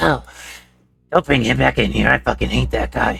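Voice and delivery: raspy put-on voice, creaky and rough. Voicing Gertrude as she is pulled out of his head: Gertrude's voice. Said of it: "she's like".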